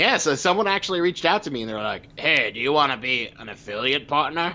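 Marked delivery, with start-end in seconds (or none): 2.2-4.5 smarmy, skeezy, sleazy voice. Retelling an email from someone offering a partnership: imitating a skeezy voice. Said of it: "that person's voice sounds so, uh, skeezy".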